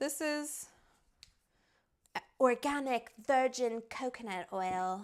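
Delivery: put-on California accent throughout. Making a recipe, introducing the coconut oil, in a California accent. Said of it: "felt like it needed a California accent".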